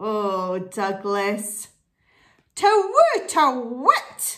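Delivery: cross and annoyed. The owl reacts after a clumsy visitor scrambles up into its tree: cross. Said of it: "said the owl crossly".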